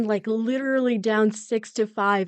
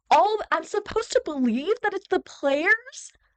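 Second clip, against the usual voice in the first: mad, worked-up, angry ranting delivery; 9 semitones higher than usual. Ranting about the players' performance in the game: angry ranting. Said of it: "I need to calm down".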